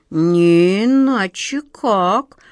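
loud, wary, distrustful, suspicious musing. The second of two figures adds to what the first just said; suspicious. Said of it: "подозрительно добавил наоборот второй".

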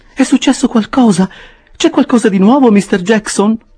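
anxious, very high-pitched. Narrator reads Mrs Bardell questioning Mr. Jackson, anxious. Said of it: "disse ansiosamente".

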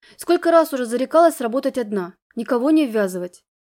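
plain

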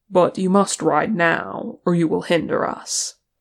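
ordinary delivery, nothing marked

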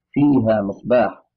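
ordinary talk, nothing marked

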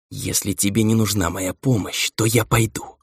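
hissing, snake-like voice. A witch answers the narrator before leaving the room, in a hissing, snake-like voice. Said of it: "По змеиному шипящим голосом произнесла ведьма".

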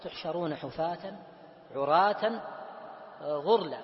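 ordinary talk, nothing marked

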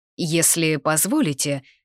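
ordinary delivery, nothing marked

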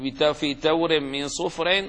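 ordinary talk, nothing marked

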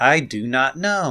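mock stiff acting delivery. Imitating the film's characters speaking proper english: imitating stiff acting. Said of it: "they're all so stiff".

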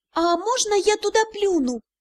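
high, whiny, pestering little gnome voice. Narrator reading a little gnome's plea to its mother, in a whiny voice. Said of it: "заныл один из гномиков".

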